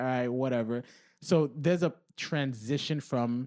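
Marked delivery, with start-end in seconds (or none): none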